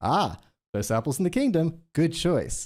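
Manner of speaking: flat, canned delivery like a looped recording. Showing what a video game shopkeeper NPC says when clicked: scripted video game shopkeeper NPC line. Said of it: "it says the same thing every time in the same way".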